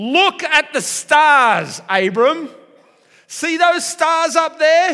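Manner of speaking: very loud, high, insistent. Retelling God taking Abram outside to see the stars, God's voice, raised. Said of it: "I think he raised his voice a little bit".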